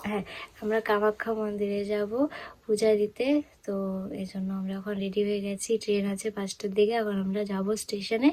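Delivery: soft hushed voice.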